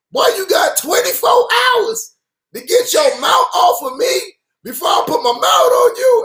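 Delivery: very high-pitched preacher voice. Retelling what a pastor said on a Miami radio station: imitating a high-pitched voice. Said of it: "this high pitched voice".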